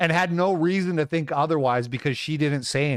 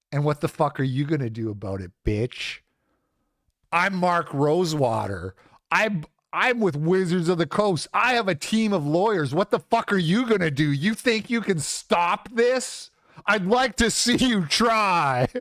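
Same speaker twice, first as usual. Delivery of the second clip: mock, aggressive, menacing rant; 2 semitones higher than usual. Imitating an imagined confrontation, mock menacing rant. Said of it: "he was gonna be like".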